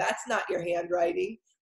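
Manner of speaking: snooty, snotty voice. Retelling a best friend calling about a birthday card, mimicking a snotty voice. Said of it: "In that snotty voice only a best friend could do".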